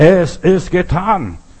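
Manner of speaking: loud, slow, triumphant proclamation.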